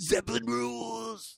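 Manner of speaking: high, rough, scraped-out voice. Doing a last-words bit as the bus goes under: Otto impression. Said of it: "Hard to do an Otto impression".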